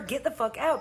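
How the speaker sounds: plain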